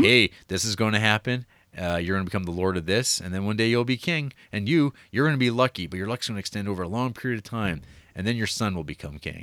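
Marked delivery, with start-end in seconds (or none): none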